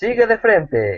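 very high, chirpy, very cheerful navigation-style voice. Mimicking the new Google Maps voice giving directions, mock-cheerful Google Maps voice. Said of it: "Ahora lo dice como muy alegre".

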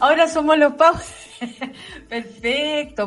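laughing while speaking.

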